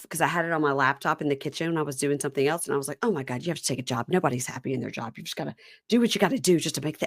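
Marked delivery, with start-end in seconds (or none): 3.0-7.1 mad, annoyed grumbling mutter. Retelling watching a show alone in the kitchen: imitating muttering to oneself. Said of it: "just muttering to myself".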